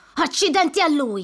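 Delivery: loud swearing. Narrator reads a character nearly run over by a truck, cursing.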